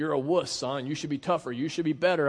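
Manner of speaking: put-on shaming, guilting tone, acted. The speaker acts out an earthly father scolding his son, imitating a shaming father. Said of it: "constantly was shaming you and guilting you".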